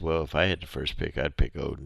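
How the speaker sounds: ordinary talk, nothing marked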